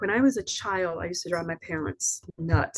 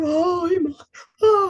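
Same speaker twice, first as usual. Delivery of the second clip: shrill, very high crying wail; 11 semitones higher, 7 dB louder than usual. Retelling how a dramatic woman burst into a dying daughter's bedroom: imitating someone screaming and crying. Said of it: "she's screaming and she's crying".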